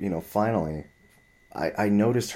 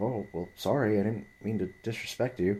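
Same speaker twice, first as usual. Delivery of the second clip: soft, meek apologetic tone. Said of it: "a very apologetic kind of person".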